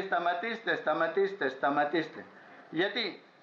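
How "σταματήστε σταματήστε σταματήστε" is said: ordinary talk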